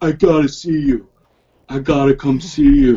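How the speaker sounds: silly, goofy, stupid put-on voice. Quoting military friends who now want to come visit: stupid put-on voice. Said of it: "that's my stupid voice that I do".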